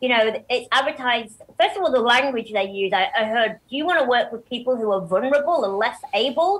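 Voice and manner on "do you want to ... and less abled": put-on American accent, slipped into. Quoting the wording of an advertised job position, American accent. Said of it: "I don't know why I'm doing an American accent".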